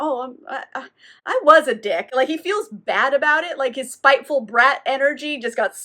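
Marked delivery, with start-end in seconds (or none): 0.0-2.1 slow, halting, remorseful put-on stammer, sad tone. Retelling a ghost admitting his fault: imitating someone sad. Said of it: "he's actually kind of sad".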